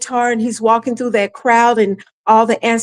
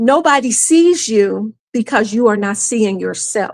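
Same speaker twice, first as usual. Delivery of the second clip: put-on, imitated whisper. Retelling what someone said to the speaker: imitating a whisper. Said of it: "Mama Aya whispers to me again".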